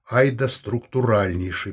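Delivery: plain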